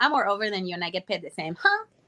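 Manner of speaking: put-on sarcastic, swooping, taunting tone. Retelling how the character made the veterans mad: imitating own sarcastic taunt. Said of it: "sarcastic about the whole thing".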